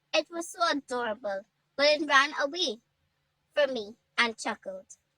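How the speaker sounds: ordinary delivery, nothing marked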